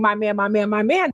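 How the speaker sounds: ordinary delivery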